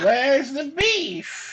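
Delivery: very high stunned double take, utterly amazed. Performing a line on request, imitating the Where's the Beef lady: very surprised. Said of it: "do a "Where's the beef?" Like the "Where's the beef" lady".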